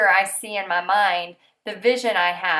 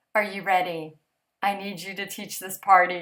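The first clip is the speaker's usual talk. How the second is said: put-on fading, half-gone voice, quieter; 2 semitones lower, 3 dB quieter than usual. A mother recounts asking her daughter to teach a party, imitating a half-gone voice. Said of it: "my half going voice and said".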